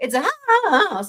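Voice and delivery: cracking, breaking voice, going high on "house". Retelling a caller's answer in a 911 call: imitating a voice crack. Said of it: "his voice cracks like that".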